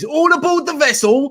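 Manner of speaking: big hollered call. Recalling a Titanic exhibition visit, calling out to his wife: retelling a shout. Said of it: "I shouted to my missus".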